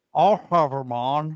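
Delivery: very slow, deliberate, stressing every word. Answering a suggestion to have a guest on: Jesse Ventura impression. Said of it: "That was my impression".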